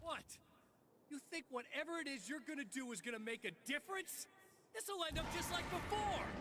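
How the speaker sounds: frightened tone, voice pitched very high. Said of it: "you sound scared".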